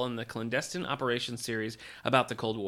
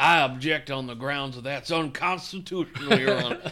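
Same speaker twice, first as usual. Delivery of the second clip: put-on loud, scheming, villainous Southern lawyer-type accent; 3 semitones higher, 5 dB louder than usual. Speaker imagines Mr. Butterworth objecting in court: villainous Southern lawyer voice. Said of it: "He sounds like a villainous Southern lawyer".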